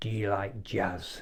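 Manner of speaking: put-on drunk, angry man voice. Retelling how a drunk man got right in the speaker's face, mimicking a drunk, angry man. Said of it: "drunk, angry".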